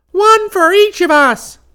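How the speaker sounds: very high, very loud, drawn-out shriek. The other eaglet rushes at Chubbins: screaming. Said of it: "screamed the other eaglet".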